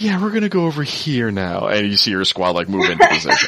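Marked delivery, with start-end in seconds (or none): 0.0-1.7 calm, soothing voice, pitched up. Describing a game mod with Bob Ross voice clips: calm soothing Bob Ross voice. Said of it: "so this really calm, soothing voice".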